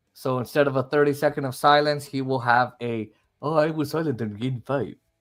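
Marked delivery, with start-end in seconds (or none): 3.4-4.9 put-on Russian accent. On Ovechkin and Gretzky's record, an Ovechkin impression with Russian accent. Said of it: "that was a Russian accent".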